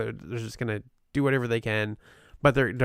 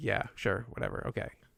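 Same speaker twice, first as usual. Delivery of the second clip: put-on whispered, breathy, dismissive, couldn't-care-less tone; 8 dB quieter than usual. Imitating the other speaker's tone about a team name: mock dismissive tone. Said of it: "I can hear it in your tone immediately".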